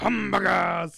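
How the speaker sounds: very loud, rough, raw bellowing yell. Retelling a movie scene where Pee Wee Herman goes: imitating Pee Wee Herman yelling. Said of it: "Pee Wee Herman ... he was going".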